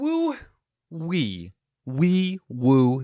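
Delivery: put-on very slow, sing-song babbling like a toddler. Signing off the episode playfully: sounding like a toddler. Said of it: "I know I'm sounding like a toddler".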